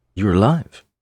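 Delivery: rising, questioning tune on the word alive. Showing how to say the recreated clip line: rising question intonation. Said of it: "Like a question. Goes up".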